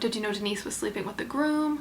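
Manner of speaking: ordinary talk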